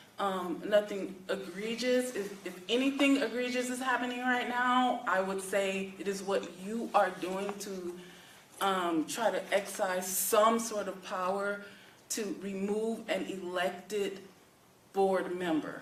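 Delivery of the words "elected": stress placed on the word 'elected'. Questioning someone trying to remove a board member, stress on 'elected'. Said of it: "I'm stressing the word elected".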